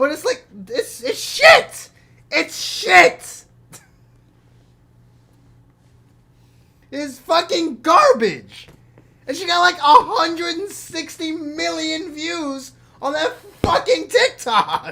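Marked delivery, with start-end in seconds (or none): 1.0-14.9 all-out, hard, loud yelling. Ranting about a catchy TikTok with huge views, yelling hard. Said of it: "I'm yelling so hard".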